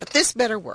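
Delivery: ordinary delivery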